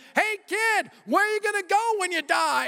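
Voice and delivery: mock screeching, very high, shrill scream. Retelling how a friend ran at a boy: imitating someone screaming.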